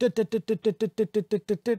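high, loud mouth flap "dut dut". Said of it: "but the mouth was like".

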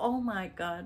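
mock upset, worked-up, agitated tone. A mother retells what her daughter told her, acting out upset daughter. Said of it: "And she's all upset".

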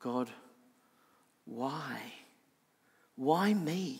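very soft, despairing, pleading tone.

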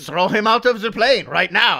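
clumsy, fake French accent, very loud and high. Mocking dumb villain movie logic, in a bad French accent. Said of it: "I'm doing a French accent because I can't really do it".

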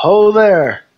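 high, friendly, non-threatening calling out. Voicing a character approaching strangers while waving an arm: non-threatening hail. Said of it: "in a non-threatening manner".

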